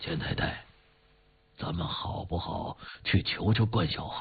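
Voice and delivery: low, hushed, breathy murmur, almost whispered. After long thought, old Qi answers Mrs. Qian in a low voice. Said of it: "他声音很低地说".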